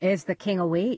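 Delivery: plain reading voice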